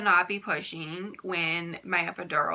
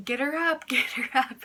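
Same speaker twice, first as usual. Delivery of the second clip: play-acted, high-pitched yelling; 7 semitones higher than usual. Retelling how the mom yelled during the vomiting: imitating someone yelling. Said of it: "my mom's, like, yelling".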